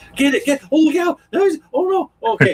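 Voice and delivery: put-on very high, frantic, panicked cries. Recalling Kelly watching the whole chainsaw sequence in the game: imitating Kelly panicking. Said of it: "she's panicking".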